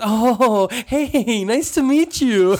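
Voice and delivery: put-on laughing while talking. Retelling meeting Ken Jeong, imitating Ken Jeong laughing while talking. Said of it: "laughing as he's saying".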